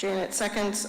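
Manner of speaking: normal talking voice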